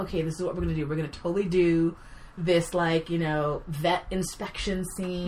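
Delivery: ordinary delivery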